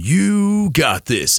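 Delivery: owning every word, with ownership, echoing. Showing how they say an encouraging phrase into the microphone: with ownership, echoing. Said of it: "I say it with ownership. I say it like, you know, and it echoes through the microphone".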